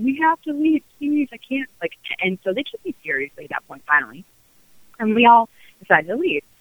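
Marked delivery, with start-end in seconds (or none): 0.0-1.7 mock crazed, very high, begging scream. Speaker retells begging the others to leave, acting like a crazy person, retelling her screaming. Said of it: "I'm like screaming".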